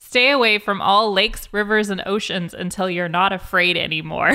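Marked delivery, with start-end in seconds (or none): none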